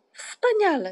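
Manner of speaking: loud, high, shouted single word. Moomintroll reacts to a suggested name for the boat, shouting. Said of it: "Krzyknął Muminek".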